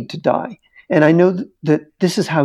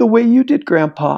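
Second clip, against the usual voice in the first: high, tearful mock weeping through tears; 6 semitones higher than usual. Retelling Sarah speaking to her absent grandfather, imitating Sarah crying. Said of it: "she's crying at this point".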